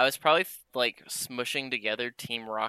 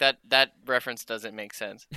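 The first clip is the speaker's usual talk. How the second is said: ordinary talk, nothing marked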